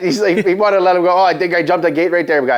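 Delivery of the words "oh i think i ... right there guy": plain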